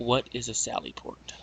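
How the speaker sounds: theatrical whisper. Whispering a question to the squadron in character: whispering. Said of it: "I'm going to whisper to my".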